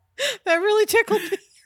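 high, loud laughing through tears.

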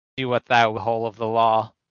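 ordinary talk

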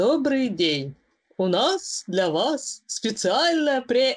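mechanical, robotic automated female voice, machine-like reading. Describing a spam phone call, imitating the caller's robotic female phone voice. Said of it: "женщина роботизированным голосом говорит".

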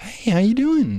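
very high, gushing, overly friendly voice. The speaker imitates a too-friendly American waiter at a table, in a mock overly friendly voice. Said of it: "your voice goes up an octave".

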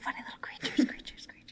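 whispered fake echo repeating the last word. Playfully echoing the other speaker's words: fake echo effect. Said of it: "where everything echoes, echoes, echoes".

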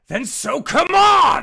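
very loud, shrill, high-pitched yelling. Looking straight at her after her answer, he yells at her. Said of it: "he looks at her and he yells".

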